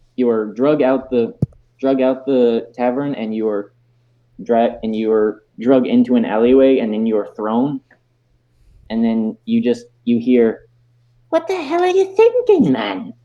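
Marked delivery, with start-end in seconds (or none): 11.3-13.0 very high, wildly swooping character voice. Voicing the informant who drags a player into an alleyway: Corin Greenbottle voice. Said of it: "you recognize this voice".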